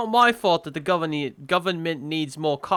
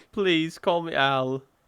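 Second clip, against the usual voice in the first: put-on, attempted British accent. Reading a script, playing Alan speaking to a nurse, attempted British accent. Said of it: "I'm supposed to be talking British".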